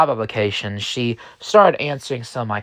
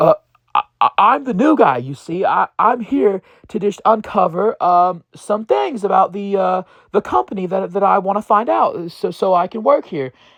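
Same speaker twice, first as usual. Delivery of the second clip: mock rattled, stumbling nervous stammer, pitched up; 8 semitones higher than usual. Retelling a stammered excuse to a man in a suit: imitating own nervous stammering. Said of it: "And I got real nervous".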